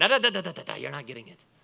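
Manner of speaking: rough, creaky, raspy voice. Speaker retelling the bread miracle story: Rabbi Jesus voice. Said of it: "That's my best Rabbi Jesus voice".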